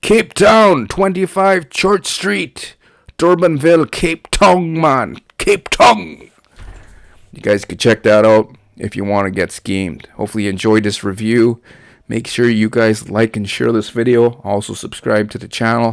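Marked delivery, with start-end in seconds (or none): 0.0-6.3 very high, slow, stretched-out put-on Jamaican accent. Giving the address at the end of a review video, in a jamaican accent. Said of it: "We'll say the Jamaican accent anyway".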